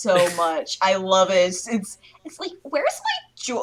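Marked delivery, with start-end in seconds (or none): 2.6-3.6 very high, demanding, entitled voice. Chatting with friends, the speaker slips into a Karen impression. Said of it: "stop your Karen impressions".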